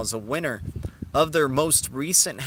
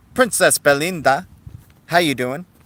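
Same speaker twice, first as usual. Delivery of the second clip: very loud, bad, terrible fake Spanish accent; 2 semitones higher, 9 dB louder than usual. Greeting a newcomer to the Blue Wrench, in a terrible Spanish accent. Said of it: "Terrible Spanish accent, I know".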